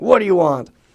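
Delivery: loud, mean, rude and unfriendly. Retelling a man at a window asking what they want: imitating mean, rude speech. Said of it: "really mean Japanese".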